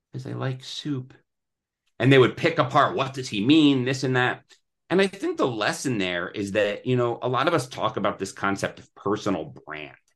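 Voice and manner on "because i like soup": small, shy, quiet little voice, soft. Retelling a shy man's answer to the press, imitating a quiet little voice. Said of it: "he would say in this quiet little voice".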